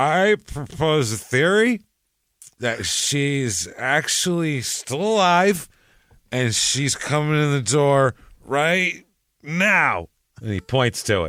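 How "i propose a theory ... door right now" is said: put-on high-pitched, thoroughly drunk voice. Acting out a witness showing up drunk before a grand jury: imitating drunk Robert Myers. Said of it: "He is shit-faced drunk".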